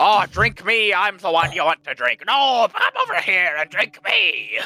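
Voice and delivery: put-on loud, swooping dwarvish accent, calling out. Voicing the alcohol in a dwarven bar: loud dwarven accent. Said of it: "speaks loudly and with a dwarven accent".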